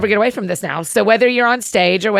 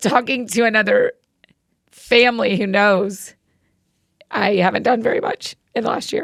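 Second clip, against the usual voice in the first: teary voice, catching and choking up. Speaking of the family's grief to another grieving family, teary and choking up. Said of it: "I'm just so teary about it".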